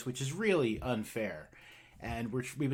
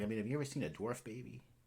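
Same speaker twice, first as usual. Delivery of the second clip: lowered hushed voice, much quieter; 4 semitones lower, 9 dB quieter than usual. Retelling how a man looked both ways before asking; imitating him lowering his voice. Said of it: "he get lowers his voice".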